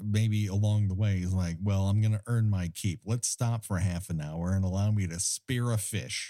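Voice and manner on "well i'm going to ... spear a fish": ordinary talk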